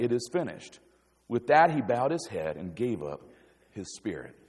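flat, level monotone with no inflection at all. Reading a Bible verse the usual way, flat monotone. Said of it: "usually we just read it just like that, monotone".

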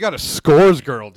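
very loud, booming, full-volume talking. Telling the others a guest has come: loud voice. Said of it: "I'm a little loud".

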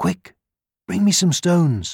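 hushed whisper. The little red hen, beside the sleeping fox, to the cock: whispering. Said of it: "whispered the little red hen".

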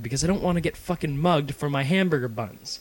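dead serious, very matter-of-fact tone. Retelling an answer on why a bag was needed: retelling own very serious tone. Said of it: "very seriously said".

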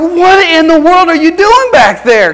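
high, loud, exasperated parent yelling.

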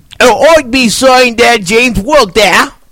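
put-on British accent. Picking who will win a fight, right after announcing an accent, put-on accent.

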